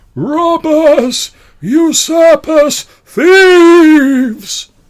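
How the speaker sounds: very high, loud, slow mournful distant wail. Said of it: "a mournful voice being like".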